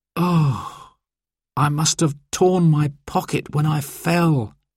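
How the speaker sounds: with a sigh. Dad, trapped on a mountain with his children, speaks, sighing. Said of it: "sighed Dad".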